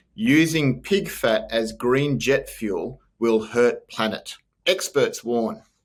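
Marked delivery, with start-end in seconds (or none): 0.2-4.4 slow, deliberate, each word spelled out carefully. Reading a news headline aloud slowly for everybody, slowly. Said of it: "I'll say this slowly for everybody".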